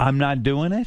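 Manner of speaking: plain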